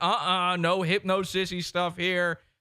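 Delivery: panicky, alarmed, freaked-out voice. Retelling refusing a movie pick with friends: imitating own freaked-out protest. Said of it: "I'm freaking out".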